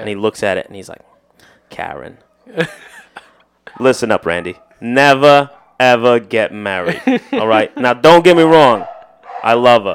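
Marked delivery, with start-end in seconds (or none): 1.7-9.9 put-on New Jersey accent, loud and slow. Retelling a customer who took a phone call during his oil change, imitating a New Jersey accent. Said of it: "he was from Jersey".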